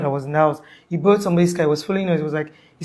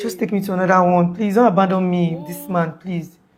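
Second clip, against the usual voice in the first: imitated pleading tone. Retelling how an injured woman begged not to be left: imitating her pleading. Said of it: "That's how she was talking".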